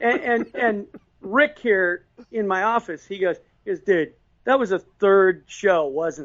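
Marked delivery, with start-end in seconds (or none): none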